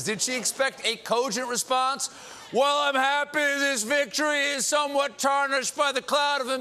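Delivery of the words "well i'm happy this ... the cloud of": put-on drunk voice, much higher and louder. Mocking a reporter for interviewing drunk fans, imitating a drunk fan. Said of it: "(AS DRUNK GUY)".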